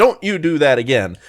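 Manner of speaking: ordinary talk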